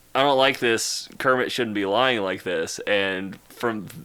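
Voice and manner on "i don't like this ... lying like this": normal talking voice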